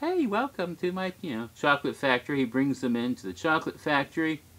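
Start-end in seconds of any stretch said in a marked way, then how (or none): 0.0-2.4 little, lightly high-pitched voice. Retelling a group story where Willy Wonka welcomes them, in a little Willy Wonka voice. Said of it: "he's in his usual little voice".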